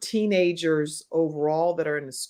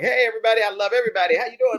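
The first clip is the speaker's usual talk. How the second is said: high, overbearing, outgoing, big voice; 5 semitones higher than usual. Retelling own school days, imitating own outgoing younger self. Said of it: "I was like".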